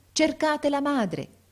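calling out loudly. A gentleman calls out to the crowd; shouted to the crowd. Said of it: "gridava il signore alla folla".

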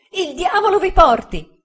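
shrill, very high, loud cry of pain. Narrator reads a man's line after his wrist is struck, shouting in pain. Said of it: "gridò Uriah, contorcendosi dal dolore".

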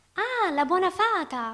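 very high, slow, happy, joyful exclamation. A girl, offered a hand by a veiled lady, exclaims: happy exclamation. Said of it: "esclamò felice".

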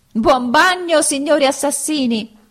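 loud, high shout through laughter. Pinocchio, still running, calls back to the assassins who fell into the ditch, shouting while laughing. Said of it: "urlò ridendo e seguitando a correre".

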